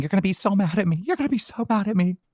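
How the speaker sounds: acted, upset crying, high and tearful pleading. Reading out a streamer's account of a phone call, mimicking Fupa Cheese crying. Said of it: "she was crying and saying".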